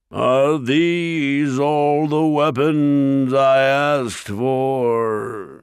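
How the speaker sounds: ringing, sneering, very slow boom, for drawn out. Narrator reads the ogre turning to the dwarves: Mulgarath, ringing tones. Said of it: "The ogre's great horned head loomed over the rest of the creatures as he turned back to the dwarves with a sneer. ... [name]'s ringing tones echoed through the quarry".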